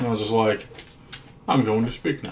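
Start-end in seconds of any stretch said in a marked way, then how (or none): 1.5-2.3 put-on proper English voice, quieter. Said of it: "like a proper Englishman".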